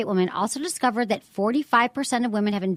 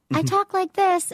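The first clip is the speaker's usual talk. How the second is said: put-on high, squeaky, helium-like childlike voice; 8 semitones higher than usual. Recalling being heard over everyone in third grade: imitating own high childhood voice. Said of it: "I sounded like I was sucking on helium".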